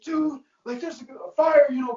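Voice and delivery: put-on high-pitched, frantic, freaked-out voice. Retelling his reaction to a grease fire late at night: imitating someone freaking out. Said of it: "freaking out".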